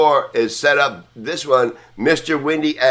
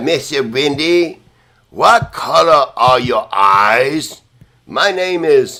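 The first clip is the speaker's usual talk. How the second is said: put-on very slow French accent; 3 dB louder than usual. Recalling a radio call-in, imitating the caller's french accent. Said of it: "He had a French accent".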